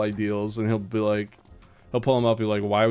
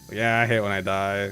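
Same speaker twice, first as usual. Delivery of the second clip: put-on irritating, grating voice. Retelling a game, the speaker imitates a player's reaction to dying, mocking annoying voice. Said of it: "like the most annoying voice".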